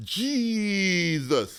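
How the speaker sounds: stretched vowels in jesus.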